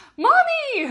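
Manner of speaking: thrilled, excited cry, very high and very loud. Acting out a daughter's imagined greeting: imitating an excited daughter. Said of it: "And she'd be so excited".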